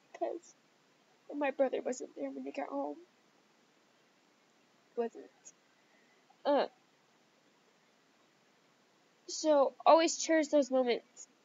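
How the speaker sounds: tearful, crying while speaking. Speaking about losing his brother, crying. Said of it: "sorry for crying in this video".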